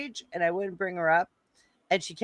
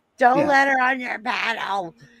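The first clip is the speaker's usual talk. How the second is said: loud, high, drawn-out, stretched screaming; 5 semitones higher, 5 dB louder than usual. Retelling screaming at another speaker while watching: imitating own screaming. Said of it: "I'm screaming at you the whole time".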